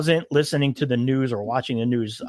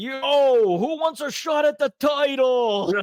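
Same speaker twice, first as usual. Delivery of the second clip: put-on shrill, very high, loud rowdy drunken holler, yo drawn out; 12 semitones higher than usual. Speaker recalls him coming into the lobby at 2 a.m., retelling a loud shout. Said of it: "he'd be like real loud in the lobby".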